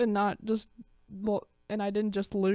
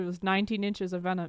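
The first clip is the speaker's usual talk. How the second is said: plain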